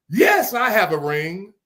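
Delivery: mock, heavy, slow, drawn-out sarcastic tone. Retelling how Brenda answered Kim's question: imitating Brenda's sarcastic reply. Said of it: "and sarcastically, Brenda said".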